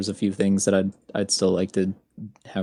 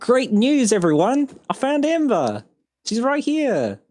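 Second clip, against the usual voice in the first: very high, swooping, excited in-character voice; 4 dB louder than usual. Voicing a character who bursts open the door: excited announcement. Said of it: "He's gonna say".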